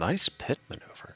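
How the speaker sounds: quiet muttered aside. Narrating a scene as the player starts driving, Billy muttering under his breath. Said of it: "just sort of mutter under his breath".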